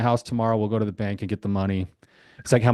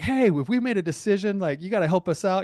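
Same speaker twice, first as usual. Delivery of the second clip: put-on yelling, very high, projected upward; 10 semitones higher than usual. Husband retells his wife yelling at God in the mountains; imitating wife yelling at God. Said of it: "yelled at God".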